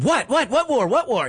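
put-on screaming. Retelling how she reacted on hearing the word war, retelling her scream. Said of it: "She just screamed".

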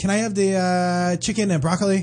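light put-on Chinese accent. Showing how they order in a Chinese restaurant, in a slight Chinese accent. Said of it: "I have a tiny little Chinese accent".

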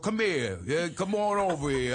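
put-on dim-witted boxer character voice. Recalling a scene where he played a boxer, dumb boxer voice. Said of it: "I played a dumb boxer".

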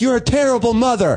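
high-pitched, berating, harsh yell. Retelling yelling at a woman in a car who was screaming at them: retelling yelling at her. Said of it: "laying into her about being a terrible".

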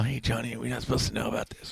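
hushed, secretive, half-whispered aside. Retelling a secret question to a friend: retelling a half-whisper. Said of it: "whispered in your ear".

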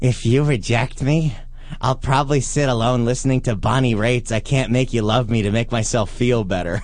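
creepy put-on delivery, low voice. Reading aloud something the other speaker wrote, in a creepy voice. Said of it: "get my creepy voice on for this one".

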